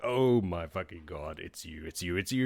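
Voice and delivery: mock frantic, starstruck freakout. Retelling a character recognizing a hero: imitating someone freaking out. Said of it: "And he's freaking out".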